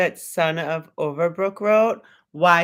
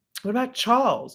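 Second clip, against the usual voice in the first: mock, fake English accent, higher pitch; 6 semitones higher than usual. Retelling how Mom says a name: imitating Mom's put-on English accent. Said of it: "you don't have, like, an English accent".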